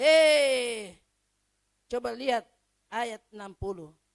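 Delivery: loud, angry calling out.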